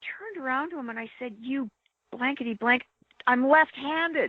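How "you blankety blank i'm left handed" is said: slow screaming yell, every word drawn out. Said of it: "I'm screaming back at him".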